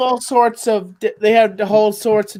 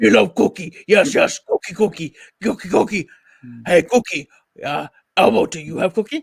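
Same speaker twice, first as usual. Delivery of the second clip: hungry, craving puppet monster voice; 3 semitones lower than usual. Asked if he does Cookie Monster, playing a skit with Elmo in Cookie Monster voice. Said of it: "do you do Cookie Monster?".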